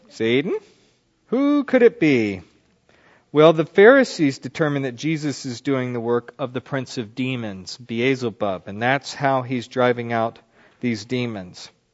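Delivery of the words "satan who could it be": full lady character voice with swooping pitch. Teaching on the religious leaders' accusation, voicing their question in a church lady voice. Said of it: "I wanted to use my church lady voice there".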